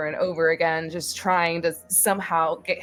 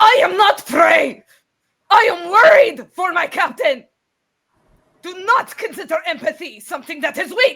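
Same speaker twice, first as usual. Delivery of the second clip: very high, very loud snarl of rage; 12 semitones higher, 10 dB louder than usual. Voicing a raging character who turns to another and growls: Grendel growling in rage. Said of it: "She turns to Nog and she growls".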